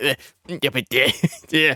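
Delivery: mimicked, put-on hoarse voice. Mocking the co-host trying to talk trash: imitating Court's sore throat voice. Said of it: "every time you're trying to talk trash, you're like".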